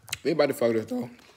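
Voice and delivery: voice cracking. Eating very spicy peppers on camera: voice cracking. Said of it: "That voice crack".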